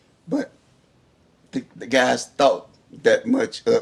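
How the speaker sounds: emotion held back, voice catching, choked up. Telling how coworkers took up a donation for them: holding back emotion. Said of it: "I'm trying not to get emotional".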